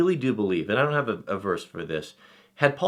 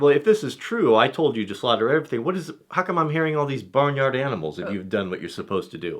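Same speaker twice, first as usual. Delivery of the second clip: thick with sarcasm throughout, sarcastic retort tone; 5 semitones higher, 4 dB louder than usual. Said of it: "a lot of sarcasm".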